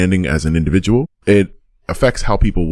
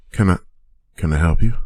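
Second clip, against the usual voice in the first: frightened, scared, hesitant voice. Voicing a dwarven woman opening the door to strangers: scared. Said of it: "she looks pretty scared".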